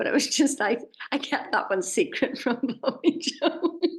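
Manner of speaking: talking through laughter. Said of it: "sorry for laughing like that".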